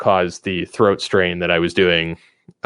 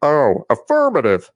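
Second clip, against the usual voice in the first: goofy, silly soldier voice, pitched higher; 7 semitones higher than usual. Showing the voice of a park ranger character: Ranger Bob voice. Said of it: "he's like".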